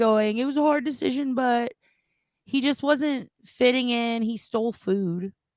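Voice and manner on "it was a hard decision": put-on weepy, tearful, higher-pitched crying voice. Retelling what she said on her channel: imitating someone crying. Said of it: "shows up on her channel crying".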